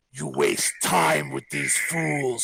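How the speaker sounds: sinister, rough, creaky demonic voice. A statue of an angel grabs a character's arm and speaks in a devilish voice. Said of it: "in a devilish voice".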